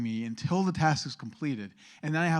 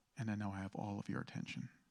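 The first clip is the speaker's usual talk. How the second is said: firm, much quieter and faster; 5 semitones lower, 15 dB quieter than usual. Speaker demonstrates addressing an audience, quiet and firm. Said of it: "speak quietly and firmly".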